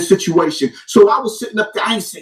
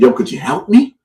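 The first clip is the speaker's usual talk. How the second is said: mock pleading, begging tone with swooping pitch; 7 semitones lower than usual. Retelling asking someone for help after a lawsuit notice: retelling own begging and pleading. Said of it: "Now I'm begging and pleading".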